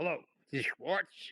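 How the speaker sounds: rough, gruff tone. Retelling a surprise phone call from Norman Mailer: imitating Norman Mailer's gruff voice. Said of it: "a very gruff voice says to me".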